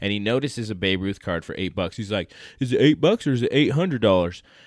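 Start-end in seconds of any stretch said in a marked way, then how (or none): 2.6-4.4 put-on very loud Fresno accent. Retelling a buyer's question at a card shop: put-on Fresno accent. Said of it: "I'm just putting my Fresno accent on it".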